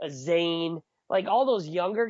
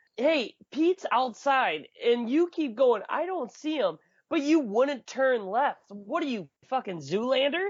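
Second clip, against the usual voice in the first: loose, easy, mild half-yell; 6 semitones higher than usual. Retelling how a buddy answered the phone and called out: imitating Dustin yelling. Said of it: "He yells".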